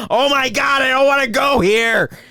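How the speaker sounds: put-on high, loud screaming child. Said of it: "you're screaming like".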